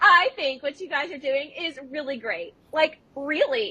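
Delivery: high, pressed, emphatic delivery. Retelling what Parker said on coming up to the group, imitating Parker's loud voice. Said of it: "Take it again".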